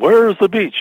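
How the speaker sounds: put-on loud projected voice. Recalling what vaudeville performers would call out, imitating a loud, projected voice. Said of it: "in a really loud, projected voice".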